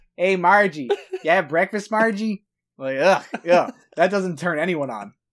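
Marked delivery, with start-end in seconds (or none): 0.2-2.5 put-on Minnesota accent. Joking about how a man talks in bed, in a Fargo Minnesota accent. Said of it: "it's like fargo".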